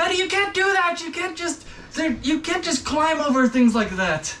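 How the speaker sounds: very high, scolding squeal. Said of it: "You go".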